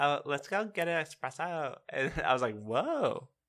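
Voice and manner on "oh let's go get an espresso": very high-pitched woman's voice. Describing a lady in a video: imitating a lady's really high voice. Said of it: "she's talking in a really high voice".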